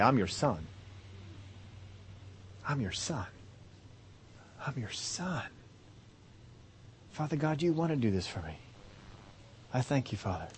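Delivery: assured, confident, breathy whisper. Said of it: "All you need to do is say".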